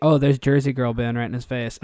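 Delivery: ordinary delivery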